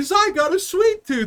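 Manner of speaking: put-on very high-pitched, bratty, spoiled rich-kid voice. Retelling a show's flashback scene: imitating a bratty rich kid. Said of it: "a bratty little fucking, like, rich kid".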